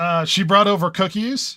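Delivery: plain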